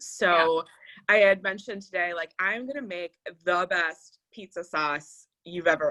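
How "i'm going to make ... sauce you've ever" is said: ordinary talk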